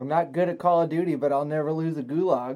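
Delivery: ordinary talk, nothing marked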